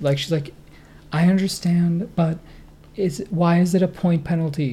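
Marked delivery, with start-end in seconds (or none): 1.1-4.7 polite, mild, gentle pleading voice. Retelling how she questioned the umpire, imitating a gentle, pleading voice. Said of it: "she put on the most gentle, pleading voice".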